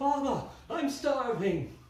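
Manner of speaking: put-on high cry, young man's voice. Narrating a scene, the speaker voices a young man crying out from beneath the chapel floor: young man crying out. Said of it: "you hear a young man's voice cry out".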